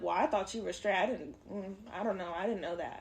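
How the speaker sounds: soft, half-voiced muttered aside under the breath. Retelling how a woman looked at the speaker, imitating someone muttering under her breath. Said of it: "under her breath was like".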